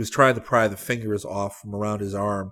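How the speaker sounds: ordinary delivery, nothing marked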